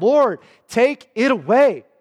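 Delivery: desperate, pleading cry, high and slow. Retelling how a man pleaded with the Lord three times, acting out a desperate cry. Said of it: "It was a desperation cry".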